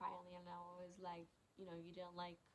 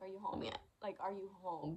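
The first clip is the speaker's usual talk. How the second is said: acted hysterical crying, louder; 7 dB louder than usual. Retelling a phone call to a fiance: retelling hysterical crying. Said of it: "I'm hysterically crying".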